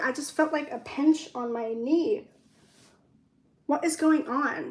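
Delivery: panicky, jumpy, flustered, freaking-out outburst. Feeling a pinch on your knee and fearing ants, freaking out. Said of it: "I'm sorry, I'm freaking out".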